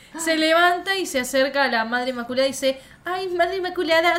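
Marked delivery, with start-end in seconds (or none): 3.1-4.2 put-on goody-goody sweet voice, higher pitch. Retelling how Kat approaches the Mother Superior: imitating Kat playing the goody-goody. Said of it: "se hace la buenita pelotuda de mierda".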